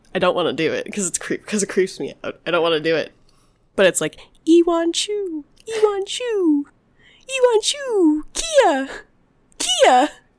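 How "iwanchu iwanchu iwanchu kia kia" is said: put-on whiny, very quiet voice, much higher, slower. Retelling a creepy story, imitating the whiny, really quiet voice he heard. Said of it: "this whiny, like, really quiet voice".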